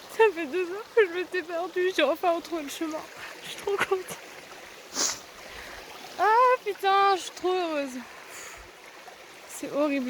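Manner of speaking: high, tearful speech while crying. Finally finding the trail after two hours lost, crying while talking. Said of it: "je pleure tellement".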